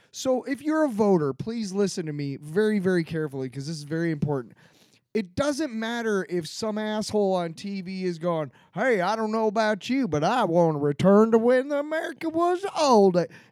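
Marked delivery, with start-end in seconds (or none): 8.7-13.1 put-on, folksy, homespun down-home guy voice. Mocking a guy on tv talking to voters, in a put-on down-home guy voice. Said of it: "He's talking like a down-home guy".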